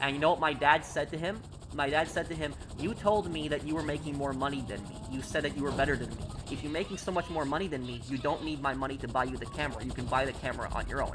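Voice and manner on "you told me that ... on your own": usual speaking voice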